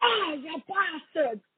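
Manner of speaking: put-on Scottish accent that does not quite land. Retelling a dad's line after his kid scares him: attempted Scottish accent. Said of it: "the dad's always saying in a Scottish accent".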